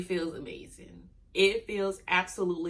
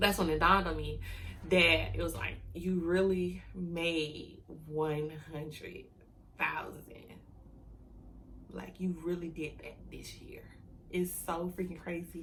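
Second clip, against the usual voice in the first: quiet, near tears, words stretched; 7 dB quieter than usual. Speaking to viewers in a video: on the verge of tears. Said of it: "I'm about to cry".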